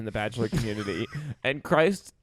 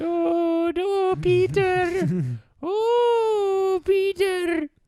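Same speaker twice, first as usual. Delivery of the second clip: put-on very high old Scottish lady voice, long oh; 4 dB louder than usual. Calling out to Peter while doing a Mrs. Doubtfire voice. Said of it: "It's Mrs. Doubtfire".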